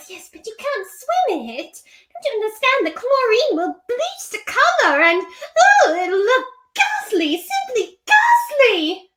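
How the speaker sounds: delicate, high sing-song tone. Acting out a requested scene where Rarity finds her sister sewing: Rarity voice. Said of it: "Rarity tries to delicately tell her".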